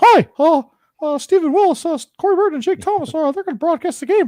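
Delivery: very high-pitched, very loud cartoon voice. Sending a clip to Mickey Mouse: Mickey Mouse voice. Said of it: "It's actually not a bad impression".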